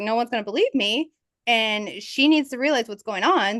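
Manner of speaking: ordinary talk, nothing marked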